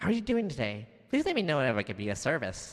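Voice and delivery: sing-song, swooping helper-robot voice. Voicing a robot character after switching the voice: robot voice. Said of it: "do I have a robot voice here?".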